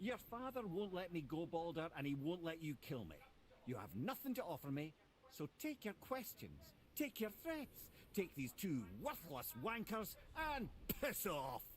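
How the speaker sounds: put-on strong Scottish accent. Refusing a threatening visitor's questions and telling him off: Scottish accent. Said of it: "He's very Scottish".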